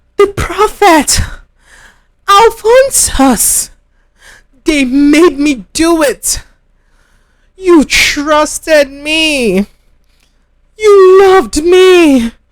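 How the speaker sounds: pained voice carrying loudly, crying out. A woman at a hospital cries out to her son, in pain, voice carrying. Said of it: "[name]'s voice carried down the corridor. / She writhed in pain, / I didn't want to put the accident substance in your food".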